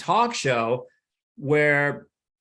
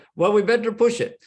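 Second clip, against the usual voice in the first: put-on Indian accent, pitched up; 7 semitones higher than usual. Acting out a sketch about test pilots from india: put-on indian accent. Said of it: "test pilots from India, you know, talking like this".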